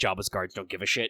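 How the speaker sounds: ordinary delivery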